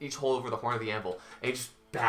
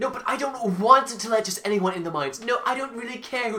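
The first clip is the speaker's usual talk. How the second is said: very high, raised, heated squabbling tone; 11 semitones higher, 6 dB louder than usual. Voicing a young-ish dwarf in a heated argument: heated argument. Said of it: "heated argument".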